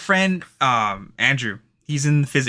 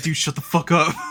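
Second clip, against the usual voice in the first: mock fed-up, annoyed, irritated, pissed-off tone; 3 semitones higher than usual. Quoting a guy who gets all pissed when teased with a quote: imitating someone pissed off. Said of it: "gets all pissed".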